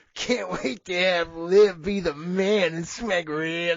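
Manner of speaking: gross, disgusting, perverted creep voice, monster-like. Showing how the line should sound to lead the segment, disgusting monster voice. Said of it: "you gotta sound like just a fucking disgusting monster".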